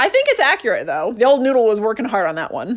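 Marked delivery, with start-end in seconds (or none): none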